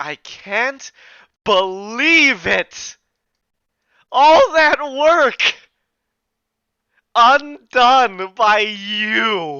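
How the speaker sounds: ragged, unhinged, haggard, crazed, shrill, very loud cry. Narrator voicing a dissipating creature's last words: haggard, crazed voice. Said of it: "It was kind of haggard, um, um, crazed tone".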